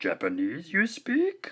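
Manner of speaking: very high and sing-songy, done badly. Showing how English in Japanese word order sounds: bad Yoda impression. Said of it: "my bad Yoda impression".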